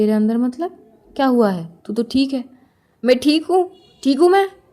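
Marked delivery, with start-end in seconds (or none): 3.0-4.5 furious, angry, raised shouting. In a scene, answering someone who asks why they're so angry: angry shouting. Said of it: "क्यों चिल्ला रही है".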